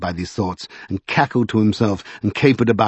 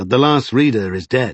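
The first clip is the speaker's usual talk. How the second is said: plain reading voice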